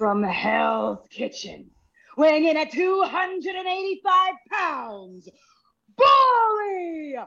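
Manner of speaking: high-pitched wrestling ring announcer style call. Asked on air to announce Bully Ray, wrestling ring announcer delivery. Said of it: "Please announce me in your best Samantha way".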